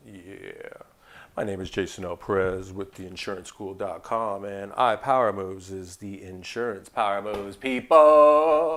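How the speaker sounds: smooth, sultry low voice, drawn out. Host introducing himself and his show: smooth, sexy voice. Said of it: "This is where I put my smooth, sexy voice on".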